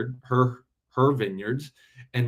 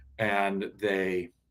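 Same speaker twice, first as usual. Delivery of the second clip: usual speaking voice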